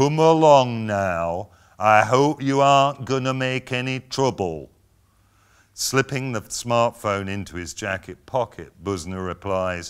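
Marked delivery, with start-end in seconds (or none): 0.0-4.7 very slow, distinct enunciation of every word. Narrator reads the manager gently grasping Busner's elbow, very slow and distinct. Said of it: "speaking very slowly and distinctly".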